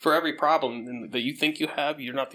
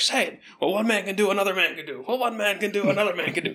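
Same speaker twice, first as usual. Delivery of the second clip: put-on, high, insistent, hard-pressing yelling; 7 semitones higher, 3 dB louder than usual. Retelling a movie scene where one character pushes another: imitating someone yelling. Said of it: "yelling at him".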